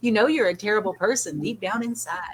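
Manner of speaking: very sweet, honeyed, sugary tone, acted. Retelling what is said to a pet bird: imitating saying it very sweetly. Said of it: "I tell her very sweetly".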